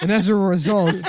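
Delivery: high, loud, slow mock announcement through laughter.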